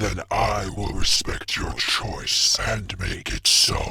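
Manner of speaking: rough, raspy, very deep voice. Reading a story aloud, a possessed character answering: raspy, deep voice. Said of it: "he says in a raspy, deep voice not his own".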